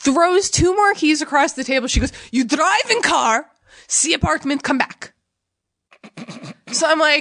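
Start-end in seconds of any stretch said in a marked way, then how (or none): 2.3-5.1 put-on Russian accent, woman's voice, broken English. Retelling what a russian woman at a desk asked: imitating a russian woman. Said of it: "the Russian woman".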